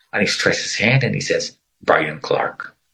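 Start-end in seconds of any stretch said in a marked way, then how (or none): 1.9-2.7 put-on robot-like voice, lower pitch. Retelling how a stranger introduced himself: imitating a robotic voice. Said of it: "like a robot".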